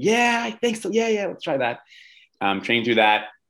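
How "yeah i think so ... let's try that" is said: much higher-pitched athlete voice. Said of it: "And she's like".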